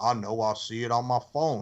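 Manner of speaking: put-on upset, annoyed tone. Retelling how a wrestler answered a call: imitating someone upset. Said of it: "He got upset".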